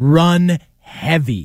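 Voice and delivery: "heavy" stressed, stretched and slow. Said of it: "I am going to emphasize the word heavy".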